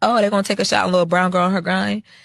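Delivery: playful, joking tone. Recounting a chat with a woman, the speaker quotes their own reply: retelling own joking remark. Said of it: "and I'm joking".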